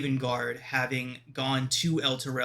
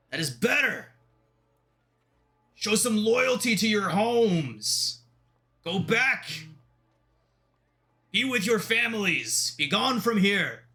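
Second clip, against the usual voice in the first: stern, slow, booming commanding voice; 8 semitones higher, 4 dB louder than usual. Voicing an armored man at the front gate: loud booming commanding voice. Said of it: "in such a loud, booming, commanding voice".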